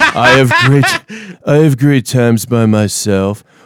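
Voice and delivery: slow, drawn-out drawl with swooping pitch. Reading a quote attributed to Keanu Reeves aloud: Keanu Reeves voice. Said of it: "read it in my Keanu Reeves voice".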